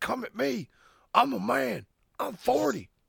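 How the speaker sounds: very high, raw, rough, drawn-out screaming rant. Retelling a coach screaming at the media: Mike Gundy screaming impression. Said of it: "Famous speech by Oklahoma State coach Mike Gundy, where he was fucking screaming".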